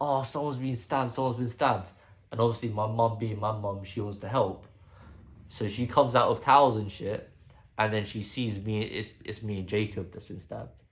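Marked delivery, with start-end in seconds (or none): 0.0-1.9 mock, repeated, half-strength scream, kept small. Retelling a delivery driver running into the yard, imitating someone screaming. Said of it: "he's screaming".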